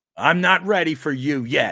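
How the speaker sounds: play-acted dismissive, slow, high, loaded with attitude. Echoing a producer's brush-off to a request: imitating Pat Egan with attitude. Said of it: "with an attitude".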